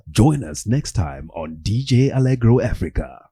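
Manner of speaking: announcer-style voiceover voice. Recording a second take for the camera, in a voiceover voice. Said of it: "With the voiceover voice".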